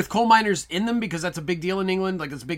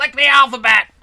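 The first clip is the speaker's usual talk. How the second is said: very loud, high, all-out screaming; 5 semitones higher, 10 dB louder than usual. Joking about how the scene would be done today: Sam Kinison screaming. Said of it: "Sam Kinison screaming".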